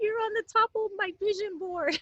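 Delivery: high, tearful crying. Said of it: "she cried and she goes".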